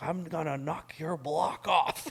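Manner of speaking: heated, furious, high-pitched holler, acted out. Retelling walking out of a job, quoting a man yelling as he follows: retelling a yell. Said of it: "And he's yelling at me".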